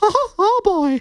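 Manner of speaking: high squeaky cartoonish voice. Showing off an impression while chatting, Mickey Mouse voice. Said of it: "That's my Mickey Mouse right there".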